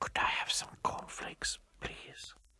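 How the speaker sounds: shy, timid, hushed whisper. Mister Quiet asks the grocer for cornflakes in the shop, whispering. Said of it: "he whispered".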